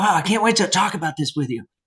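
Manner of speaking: eager, staccato burst of excitement, fast and high. Explaining how speakers sound when excited, demonstrating: excited, faster and higher. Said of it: "if we think about getting excited about something".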